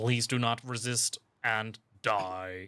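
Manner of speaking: flat, mechanical robot voice. Player delivering a one-liner after being told to use a robotic voice. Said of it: "You have to say it in a robotic voice".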